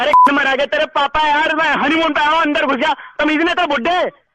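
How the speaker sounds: high, furious yelling.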